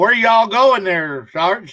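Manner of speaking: put-on drawling Southern US accent, vowels stretched. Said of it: "with a southern drawl".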